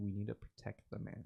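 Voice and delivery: hushed, soft, under-the-breath whisper. The speaker voices a character who walks up to another and whispers: whispering. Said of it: "and he whispers".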